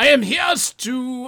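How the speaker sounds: clumsy fake German accent, very high. Voicing an undercover villain in a made-up scene, in a German accent. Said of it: "I'm doing my German".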